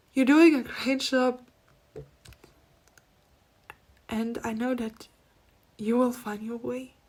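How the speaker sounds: earnest voice, moved with feeling, getting emotional. Relaying encouragement from someone watching over from the other side, getting emotional. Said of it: "Now I'm getting emotional again".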